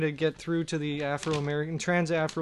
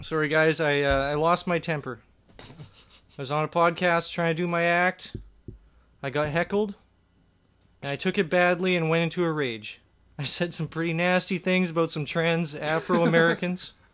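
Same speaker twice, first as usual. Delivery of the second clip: plain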